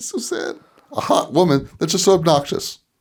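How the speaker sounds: fake crying, very high-pitched, blubbering sobs. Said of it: "Why are you crying?".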